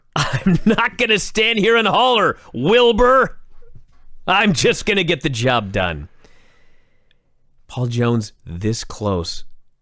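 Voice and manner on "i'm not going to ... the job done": put-on, screaming promo announcer voice. Quoting a man's promo to co-hosts, retelling Paul Jones screaming. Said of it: "He's screaming about all of this".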